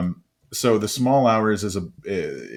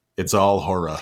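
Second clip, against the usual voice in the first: put-on spoken in a Texas accent. Quoting the first thing a new acquaintance said: Bob's Texas accent. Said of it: "he said in his Texas accent".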